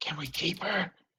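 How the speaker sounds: whispered aside. [name] speaks the question into Rima's ear, whispering. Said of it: "like whispers it in Rima's ear".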